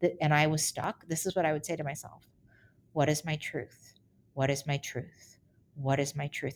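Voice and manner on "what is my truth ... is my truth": ordinary delivery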